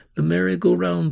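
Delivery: ordinary delivery, nothing marked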